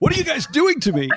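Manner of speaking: tearful, choked-up crying voice, breaking very high. Interviewer crying mid-interview and speaking to the guests, choking up, crying. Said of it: "I'm crying about Dallas Willard".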